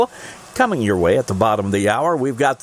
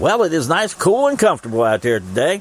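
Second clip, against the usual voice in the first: heavily sarcastic radio patter; 2 semitones higher than usual. Radio show host talking to listeners about the day, sarcastic. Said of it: "very sarcastically speaking".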